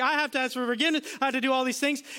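high, sobbing, bawling tearful pleading. Retelling a lady's words after last night's message: imitating someone bawling. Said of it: "She's bawling".

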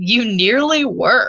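sassy, cheeky delivery. Retelling Harry's reply to the headmaster: sassy Harry voice. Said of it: "a little sassy Harry".

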